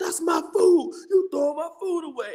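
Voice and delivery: mock raging scream, high-pitched. Retelling how a man screamed at a coworker over thrown-out food: imitating a man screaming. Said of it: "this dude apparently comes up to him screaming".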